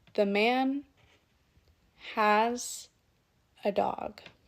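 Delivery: very slow, halting chunks with short pauses between. Demonstrating pacing on a short practice phrase: short pauses between chunks. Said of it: "I had short but meaningful pauses".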